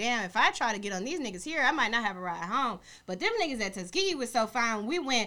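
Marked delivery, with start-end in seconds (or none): none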